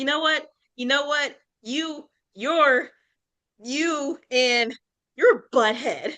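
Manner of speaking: mock mad, high, sputtering, fumbling angry retort. Retelling her reply to a book character's insulting line: imitating her own angry retort. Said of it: "as I'm mad".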